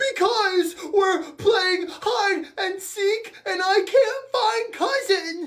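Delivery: high, tearful, crying voice. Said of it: "why are you crying?".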